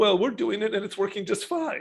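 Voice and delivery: put-on British accent, pitched slightly up. Retelling what Allison said when she showed up, imitating Allison's British accent. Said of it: "in the delightful British accent".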